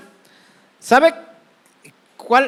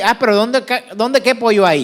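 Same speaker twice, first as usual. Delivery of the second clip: plain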